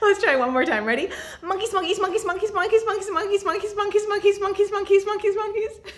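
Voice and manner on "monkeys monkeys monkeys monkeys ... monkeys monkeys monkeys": super fast rapid-fire delivery, pitched up. Leading a game, saying the word monkeys as fast as possible. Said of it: "Let's say monkeys as fast as we can".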